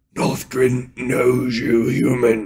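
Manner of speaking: high-pitched, sibilant, hissing monster voice. Narrator reading the creature leader Nothgrin speaking to a human, hissing Nothgrin voice. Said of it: "he hissed".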